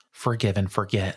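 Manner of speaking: ordinary talk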